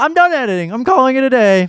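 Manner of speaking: high, loud, mock dramatic whine.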